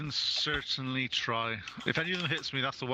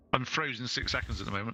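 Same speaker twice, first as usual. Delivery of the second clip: normal talking voice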